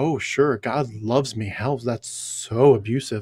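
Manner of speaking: mocking, sarcastic retort. Imitating how Christians answer a critic, imitating a sarcastic reply. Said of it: "it's like a sarcasm".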